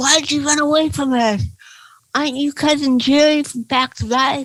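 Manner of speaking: put-on winded child voice, breathless, panting, high-pitched. Retelling what a kid said after chasing the speaker: imitating a kid out of breath. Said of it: "the one kid is breathing really hard".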